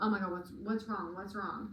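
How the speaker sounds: ordinary talk, nothing marked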